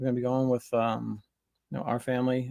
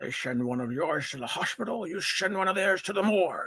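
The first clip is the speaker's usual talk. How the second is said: Scottish accent, pitched higher; 7 semitones higher than usual. A host tries out a movie line as a Sean Connery impression. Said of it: "That's as good as my Sean Connery gets".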